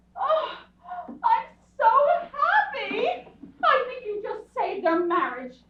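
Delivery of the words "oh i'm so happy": high, loud, tearful happy sobbing. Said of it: "Why are you crying?".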